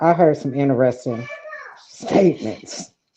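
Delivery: soft, swooping speech, fighting back laughter. Speaking up in a group discussion while holding back a laugh. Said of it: "I'm trying not to laugh".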